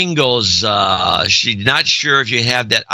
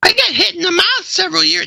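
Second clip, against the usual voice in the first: fake female voice, very high pitched. Reading a letter from a woman who is a teacher, put-on female voice. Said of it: "I should be doing a female voice".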